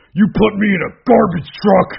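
very high, rough, loud taunting yell. Retelling Braun's trash talk during the match: imitating Braun trash talking. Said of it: "Braun's crap talking during the match".

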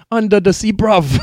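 put-on British accent.

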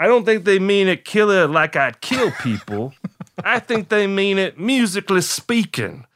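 heavy, laid-on Louisiana drawl. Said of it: "that's my [name] impression".

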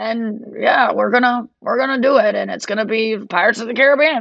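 put-on elderly voice. Retelling a comedian's bit at a comedy club, doing a Joe Biden impression. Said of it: "doing a Joe Biden impression".

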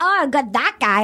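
bad put-on Irish leprechaun accent. Retelling what the people on a show said about Grant: imitating in a bad Irish leprechaun accent. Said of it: "I all sound like Irish leprechaun when I do it".

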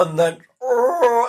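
high-pitched, loud sob escaping mid-speech. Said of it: "which starts with the sort of".

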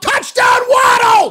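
acted-out yell at a very high pitch. Describing watching a game, the speaker imitates the guy next to you, imitating someone yelling. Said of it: "the guy sitting right next to you just yelled out".

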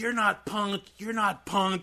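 put-on high, shrill shrieking, screaming. Retelling a goth girl yelling at a kid during a fight, imitating her screaming. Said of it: "the goth girl is screaming".

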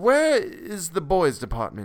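desperate, high, drawn out, with a swooping tune. Narrator reading a story, a father asking a shop clerk, desperately. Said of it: "shifting his ground desperately".

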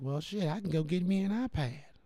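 mock soft-spoken preacher voice. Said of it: "he had a voice like that".

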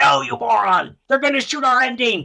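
very high, shrill screaming outburst. Retelling being screamed at about the ending: imitating Mike screaming. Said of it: "Mike started screaming at me".

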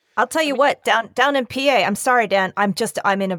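fired up, energized. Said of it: "You're fired up".

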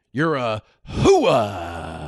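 put-on gruff shouting movie voice. Doing an impression of Al Pacino in Scent of a Woman: Al Pacino impression. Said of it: "this is my impression of, uh, Al Pacino in Scent of a Woman".

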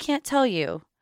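embarrassed, sheepish tone. A child answering their mom's question about who they were talking to, sheepish. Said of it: "sheepishly said".

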